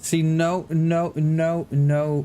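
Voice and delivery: slow, stammering, stuttering, tripping over words. Speaker trips over the opening and decides to restart, stuttering. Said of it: "Sorry, I'm stuttering".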